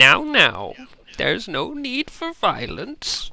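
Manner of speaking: high, swooping, lilting, drawn-out, slow voice. Voicing Granny Blue, who stops a fight from behind: Granny Blue voice. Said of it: "you hear a familiar voice go".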